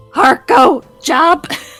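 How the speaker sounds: loud birdlike voice. Voicing a character who glances left and right, then speaks in a loud bird voice. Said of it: "in a very loud bird voice go".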